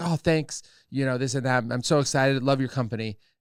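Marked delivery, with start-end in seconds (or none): none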